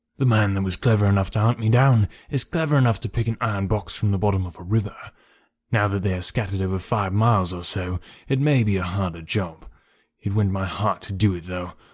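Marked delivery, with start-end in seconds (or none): none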